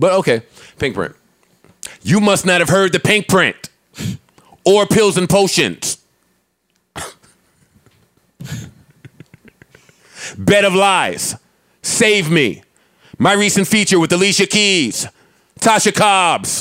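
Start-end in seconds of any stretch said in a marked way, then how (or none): 2.0-16.6 haughty, self-important celebrity voice, high and slow. Mocking a celebrity who expects everybody to know her work, imitating a celebrity's voice. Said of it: "this is like the voice that she would have".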